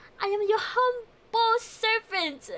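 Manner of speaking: high, grand, stagey theatrical verse-reading delivery. Asked to read a line like a shakespearean, in a shakespearean theatrical voice. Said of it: "Read it like a Shakespearean?".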